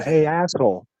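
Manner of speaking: imitated smart-ass, sarcastic tone. Retelling how one might confront someone: imitating a smart-ass tone. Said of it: "In a smart ass type of way".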